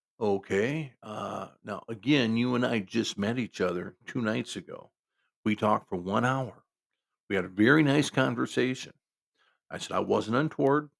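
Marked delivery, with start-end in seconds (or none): none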